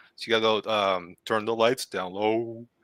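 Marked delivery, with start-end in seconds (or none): 1.3-2.6 strange, deep, put-on baritone voice. Showing the voice guys should use, say it in a weird baritone voice. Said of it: "that weird baritone, uh, voice you gotta do".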